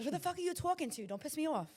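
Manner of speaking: high put-on New England accent on every word. Talking on the spot when asked: New England accent. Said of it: "you sound exactly like her".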